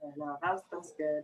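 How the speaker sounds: low, soft, choked-up voice.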